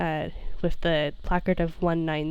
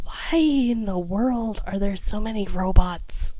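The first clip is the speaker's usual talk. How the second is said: put-on muttering under breath; 3 semitones higher than usual. Retelling Sammy's remark about the robots: Sammy muttering under his breath. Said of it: "hear Sammy under his breath go".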